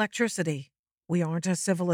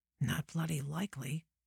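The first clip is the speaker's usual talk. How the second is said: muttered under breath, much quieter; 11 dB quieter than usual. At a table with Cross and another man, [name] answers: muttered under his breath. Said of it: "[name] muttered under his breath".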